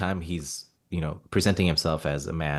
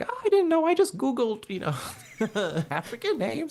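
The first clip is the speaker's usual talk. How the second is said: very high, animated, lilting, swooping sing-song voice. Retelling what the show's creator said about the name: Vince Gilligan impersonation. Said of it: "When you do the Vince Gilligan impersonation".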